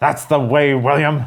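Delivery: approving cheering from further off. Voicing Harvey cheering from down the hallway: Harvey calling down a hallway in approval. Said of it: "Harvey calls down the hallway in approval".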